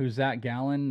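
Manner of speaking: ordinary talk, nothing marked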